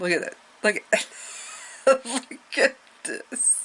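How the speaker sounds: breathy whisper through laughter. Pointing something out to listeners, laughing while talking. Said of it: "Sorry, I'm laughing".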